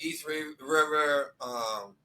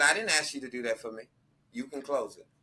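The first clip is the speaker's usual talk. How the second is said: put-on deadpan, straight-faced delivery. Retelling a woman's reply to having the door held: imitating a deadpan delivery. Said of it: "Straight face".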